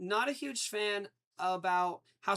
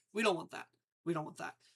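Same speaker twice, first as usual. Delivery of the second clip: ordinary delivery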